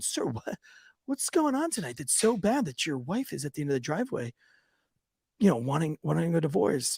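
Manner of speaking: put-on deferential tone. Officer retelling what he asked a man at the door: mock-humble tone. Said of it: "I immediately humble up".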